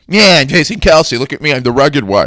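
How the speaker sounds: very loud, high-pitched put-on voice, belted out. Doing an impression of the Kelce family on a plane: Jason Kelce impression. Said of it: "this is my impression of if the Kelsey family".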